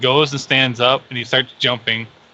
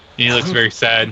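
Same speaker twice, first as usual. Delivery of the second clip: ordinary talk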